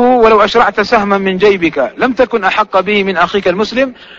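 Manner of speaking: normal talking voice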